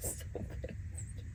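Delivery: whispered, choking back tears.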